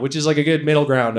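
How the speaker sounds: ordinary talk, nothing marked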